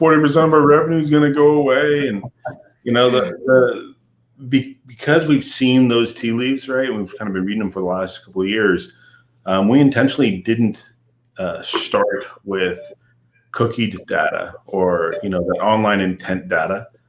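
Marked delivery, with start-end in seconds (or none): 0.0-2.1 mock crying whine, high and loud. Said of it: "out there crying, going".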